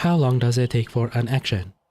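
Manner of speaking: mechanical, robotic background character voice. Playing an NPC, redoing the question like a robot: robotic NPC voice. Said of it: "I gotta do it like a robot".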